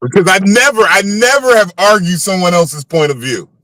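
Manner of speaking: dry, mocking tone. Answering a list of advice about dealing with narcissists: sarcastic. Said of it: "I'm saying all this sarcastically".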